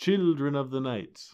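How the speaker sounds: classic put-on vampire count voice. Trying to find the voice for Dracula's dialogue, doing a Bela Lugosi Dracula voice.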